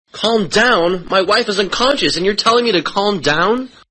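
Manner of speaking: high, outraged, indignant, panicked disbelief. A husband on the phone, told to calm down while his wife lies unconscious, in indignant panic. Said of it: "Hold on just a second".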